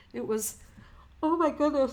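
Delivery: yawning while talking. Speaking to viewers, yawning while talking. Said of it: "I'm yawning".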